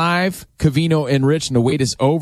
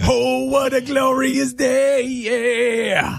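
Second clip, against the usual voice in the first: put-on very high, slow, shouted goofy kid voice. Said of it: "to Billy out there, I just wanna say".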